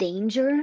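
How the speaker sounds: worried, nervous, anxious. Reading a story aloud, Timon asks about danger: nervous question. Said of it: "Timon asked nervously".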